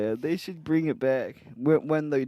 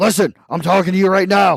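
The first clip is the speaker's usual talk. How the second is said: put-on ranting pundit voice, higher and louder; 4 semitones higher, 8 dB louder than usual. Retelling a comedian's impression on a podcast, imitating Will Sasso's Alex Jones impression. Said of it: "He did a Alex Jones impression?".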